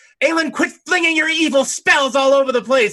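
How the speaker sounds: very high, shrill, loud screamed call-out. Voicing a character who comes out of the darkness at another character; screaming. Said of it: "comes screaming out of the darkness and screams out".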